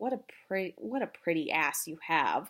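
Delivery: ordinary delivery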